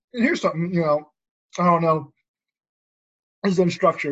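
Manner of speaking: mouth full, chewing while speaking. Talking to the guys, the speaker is talking while eating. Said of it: "I'm sorry, I'm eating, guys".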